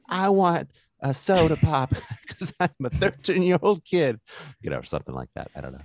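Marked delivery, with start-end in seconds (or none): 0.1-4.2 put-on Southern kid voice, much higher, slower. Imagining Hanks never breaking character when offered coffee: Hanks as Southern little kid. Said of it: "a little kid saying that in a very Southern accent".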